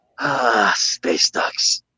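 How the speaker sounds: fed-up, exasperated, sighing delivery. Voicing a character pinching the bridge of the nose: exasperated sigh. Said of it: "pin to the bridge of nose".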